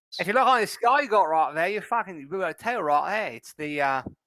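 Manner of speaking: acted high Scottish accent. A player speaks in character to another character, in a Scottish accent. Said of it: "that that's a Scottish accent".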